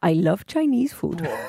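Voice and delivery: fake, put-on Russian accent. Answering a request to try an accent: put-on russian accent. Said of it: "You do a great Russian. Can you try that?".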